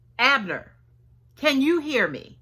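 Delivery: put-on distant calling out. Retelling how David calls to Abner from far away: acting out David yelling. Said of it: "He yells out".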